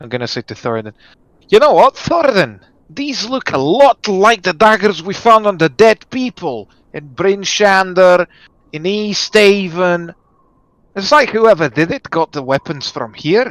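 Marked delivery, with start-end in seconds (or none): 1.5-13.5 put-on loud drunken shouting, higher pitch. Voicing a character confronting Thoradin about daggers: loud drunken shout. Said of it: "I'm gonna shout at this point. It's gonna be really loud, like a drunk person speaking".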